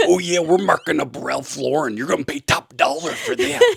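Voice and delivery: rough, high-pitched macho voice with swooping pitch. Showing items in a store in the persona: Macho Man voice. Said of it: "I would do it like that".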